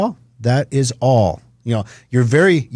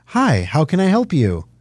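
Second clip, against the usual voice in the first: pleasant female robot voice, slower pace. Describing the drive-thru ordering robot, in its super pleasant robot voice. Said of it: "the robot voice is the super pleasant, you know, kind of female".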